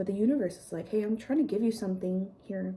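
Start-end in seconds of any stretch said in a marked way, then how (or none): none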